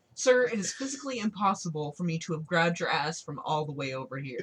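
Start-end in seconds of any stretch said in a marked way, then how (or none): none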